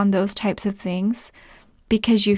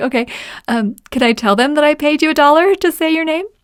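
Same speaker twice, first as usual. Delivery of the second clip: put-on laughing voice, higher and louder; 6 semitones higher, 5 dB louder than usual. Retelling a talk with a kid while skating, acting out laughing while asking. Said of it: "I started laughing".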